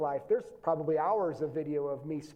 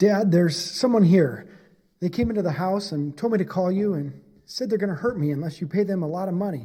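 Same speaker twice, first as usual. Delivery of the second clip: very loud, dramatic, acted voice; 9 dB louder than usual. Voice acting a dramatic scenario for a demonstration: acting out a dramatic scene. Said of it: "this is me voice acting a dramatic scenario".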